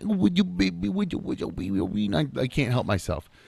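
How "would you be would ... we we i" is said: put-on cooing, high, creaky baby talk. Showing how they talk to their daughter, baby talk. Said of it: "I straight up talk to her like she's a, a like a little infant".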